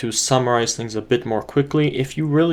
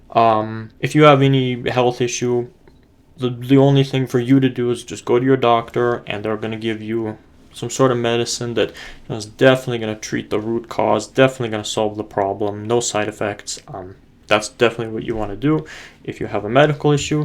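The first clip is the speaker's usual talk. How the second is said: ordinary delivery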